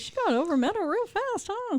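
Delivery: mock high taunt.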